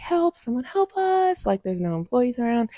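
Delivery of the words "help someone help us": very high, drawn-out, loud yell. Retelling an octopus scare with no employees around: retelling a yell for help. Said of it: "So my friend and I start yelling".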